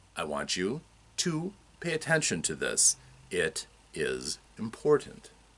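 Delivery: slow, deliberate, unhurried, measured delivery. Showing how the voice works as a throttle, slow deliberate speech.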